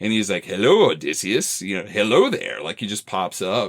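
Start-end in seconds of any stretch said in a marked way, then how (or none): 0.4-2.6 camp British delivery swinging up and down in pitch. Retelling how the messenger god greets Odysseus: Ewan McGregor type voice. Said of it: "this Ewan McGregor type voice".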